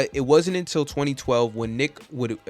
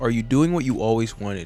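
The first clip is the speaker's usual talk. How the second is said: ordinary delivery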